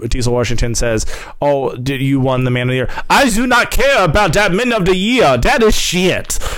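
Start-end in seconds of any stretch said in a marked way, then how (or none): 3.1-6.4 clumsy, bad put-on French accent, pitched up. Retelling an exchange from a video in a bad French accent. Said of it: "It's my bad French accent".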